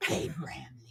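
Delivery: breathy, half-whispered character voice, almost a whisper. Quoting a movie line about Abraham Lincoln: Bill and Ted voice. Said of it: "in the Bill and Ted voice".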